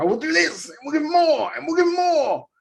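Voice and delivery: hyper, high, over-eager promoter voice. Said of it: "Tony being that ADHD in him".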